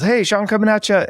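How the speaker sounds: high, loud, super excited voice. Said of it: "he's super excited".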